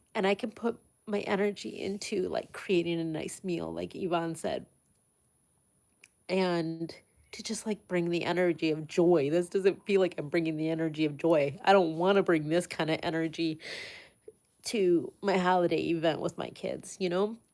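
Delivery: tearful, crying through the words. Sharing how she wants to give what she can for a holiday meal, crying while talking. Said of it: "I didn't think I was going to cry".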